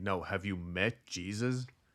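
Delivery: slow, earnest, no-nonsense, dead-serious voice. Retelling how a stranger in a changing room pressed a question: imitating someone asking seriously. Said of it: "he very seriously then asked me".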